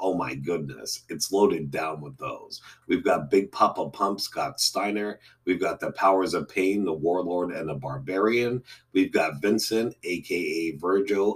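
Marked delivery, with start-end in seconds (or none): none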